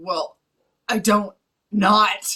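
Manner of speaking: very slow, stumbling, hesitant, fumbling over words. Retelling a movie scene, imitating Batman stuttering. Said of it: "Batman stutters and stumbles over his words".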